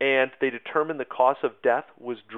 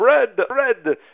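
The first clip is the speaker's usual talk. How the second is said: put-on over-the-top Russian accent, loud, shrill, pitched way up; 10 semitones higher, 7 dB louder than usual. Acting out demonstrators yelling for bread, in an exaggerated Russian accent. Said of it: "in the most Russian accent that you can think of".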